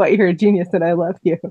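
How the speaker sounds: ordinary talk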